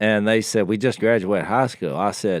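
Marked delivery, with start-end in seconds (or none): none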